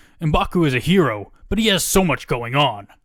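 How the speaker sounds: put-on broadcast announcer voice. Reading out what he had to say about m'baku: announcer voice. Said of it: "I don't know why I'm doing like an announcer voice right now".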